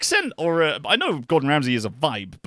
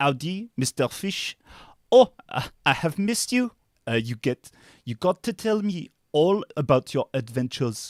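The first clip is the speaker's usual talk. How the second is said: fake, put-on French accent. Trying out his best French accent on a greeting: put-on French accent. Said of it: "This is my best French accent".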